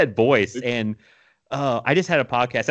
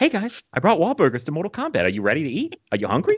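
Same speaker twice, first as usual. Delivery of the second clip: high, swooping, sing-song movie-star voice, played big; 6 semitones higher than usual. Joking about Mark Wahlberg as Johnny Cage: Mark Wahlberg impression. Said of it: "Mark Wahlberg as Johnny Cage".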